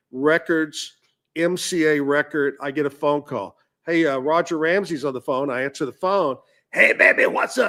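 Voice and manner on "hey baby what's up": rough, creaky voice. Retelling a phone call, act out Roger Ramsey greeting you in a Wolf Man voice. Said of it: "He sounded like the Wolf Man".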